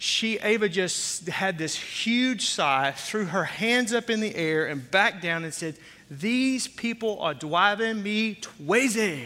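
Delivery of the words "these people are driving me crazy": small, little voice with a lisp. Retelling what Ava said after a huge sigh, imitating Ava's little lisping voice. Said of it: "with that little voice and that lisp".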